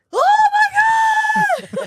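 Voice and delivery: very high, very loud, shrill, drawn-out panicked shout. Voicing characters reacting to static from the button: imitating characters freaking out. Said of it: "they're freaking out".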